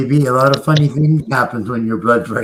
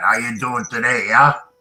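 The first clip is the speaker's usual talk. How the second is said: speech from the corner of the mouth. Showing how a prime minister talked out of the side of his face: Jean Chrétien impression. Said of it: "he talked out of the side of his face like this".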